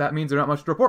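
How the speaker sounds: normal talking voice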